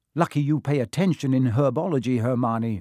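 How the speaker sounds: ordinary delivery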